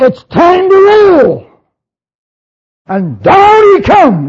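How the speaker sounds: very high slow shout. The speaker acts out the archangel before the King of Kings comes down, shouting. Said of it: "the archangel says with a shout".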